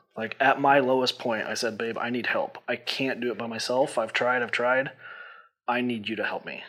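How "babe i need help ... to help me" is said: acted ugly crying, tearful. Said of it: "ugly crying".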